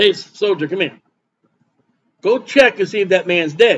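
ordinary talk

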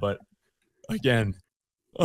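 talking through a yawn. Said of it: "I'm yawning".

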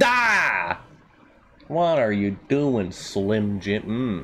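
swooping cartoon dad voice, stretched ah, swinging pitch. Show off your impression to the others, then tell them who it was: Homer Simpson impression. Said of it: "That's my Homer Simpson impression".

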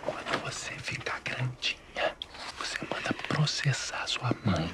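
slow, voiceless whisper.

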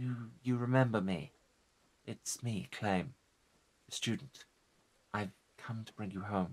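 soft, pained, pleading call. A student calls to his old teacher, come to bring him home; calling out with pain in his voice. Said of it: "[name] gingerly touches [name]'s shoulder".

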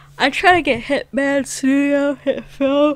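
talking through a yawn. A tired speaker talks about video editing software, yawning while talking. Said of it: "I'm so sorry, I'm yawning".

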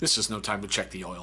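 dead-level, unvaried, flat monotone delivery. Retelling what a senior officer said after the driver pulled the wrong release; monotone voice. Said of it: "In a monotone voice".

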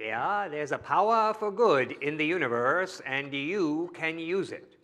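put-on convincing Maine accent. Retelling how a radio show opened each time: Ernest impression in a Maine accent. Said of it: "this great, um, Maine accent".

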